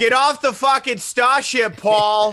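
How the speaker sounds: put-on Boston accent. Joking about the Dune movie in a Boston accent. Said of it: "You do do a good Boston".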